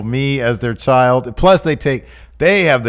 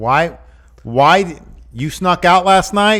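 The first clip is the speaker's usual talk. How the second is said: pitched-up, scolding, telling-off tone; 6 semitones higher than usual. Imagining a family cast, speaking as the chosen mom to her kid: mom tone. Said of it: "She kind of sounds like a mom".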